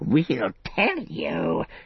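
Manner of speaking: croaking, creature-like voice. Reading a story, a figure speaks to the hobbits: croaking voice. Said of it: "he croaked".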